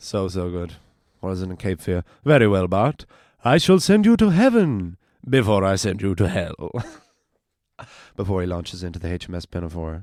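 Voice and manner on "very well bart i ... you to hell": put-on loud, booming Irish accent with wide swinging pitch. Quoting a scene, speaker does an Irish Sideshow Bob impression. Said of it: "my impression of an Irish Sideshow Bob".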